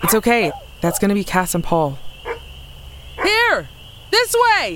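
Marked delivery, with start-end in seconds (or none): 3.2-4.8 high, carrying shout. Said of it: "Should you be shouting?".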